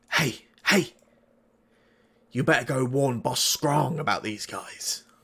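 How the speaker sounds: secretive, hushed stage whisper. Speaker retells one Mitflit warning another, half-whispering like a Mitflit. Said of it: "he sort of whispers over to the other".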